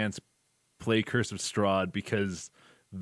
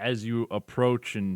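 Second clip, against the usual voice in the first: normal talking voice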